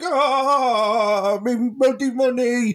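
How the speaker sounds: put-on angry grandad voice. Retelling a furious man's reaction, in a mock-angry Grandad from Bread voice. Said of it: "I did a do an impression of a grander out of bread".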